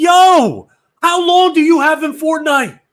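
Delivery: very loud, very high, shrill, exasperated yelling. Retelling yelling at a teammate during a game: imitating himself yelling. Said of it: "I start yelling again".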